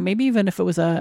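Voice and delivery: ordinary talk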